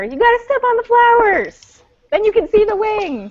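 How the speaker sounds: high, loud call projected across a distance.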